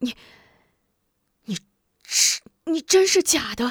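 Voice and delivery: high, quavering, stammering, trembling voice. Narrator reading a man's reply to an exposed impostor: trembling voice. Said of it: "颤声道".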